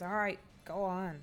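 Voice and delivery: annoyed, irritated growl. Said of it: "growls at you, like, just annoyed".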